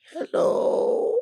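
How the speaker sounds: incredibly feeble, very weak and frail voice. Answering the phone as a joke: incredibly feeble voice. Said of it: "in an incredibly feeble voice".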